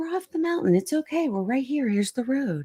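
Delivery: high, soft, super calm voice.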